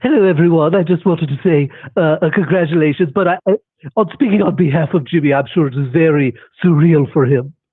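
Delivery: put-on posh British cartoon baby voice. Calling into a call-in show, the speaker takes the microphone in a Stewie Griffin voice. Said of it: "Now it's Stewie Griffin here at the microphone".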